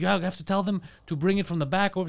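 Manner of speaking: ordinary talk, nothing marked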